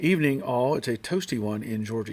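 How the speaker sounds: plain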